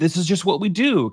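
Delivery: high, condescending, dismissive, can't-be-bothered tone. Retelling how a car service writer spoke to mom: imitating a condescending service writer. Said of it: "kinda dismissive".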